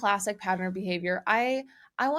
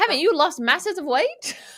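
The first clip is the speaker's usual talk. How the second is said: very high, loud, botched put-on British accent; 9 semitones higher, 7 dB louder than usual. Second try at a line after a listener mocked the first: bad fake accent. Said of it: "was so much worse".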